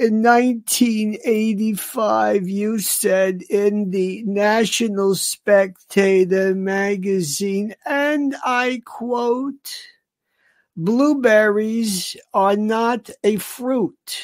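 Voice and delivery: very slow, unhurried, easy-to-follow delivery. Showing how a man who never smiles talks, imitating a very slow, easy talker. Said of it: "He is a court reporter's dream".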